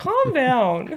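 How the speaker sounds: mock soothing pleading tone, pitched high and loud.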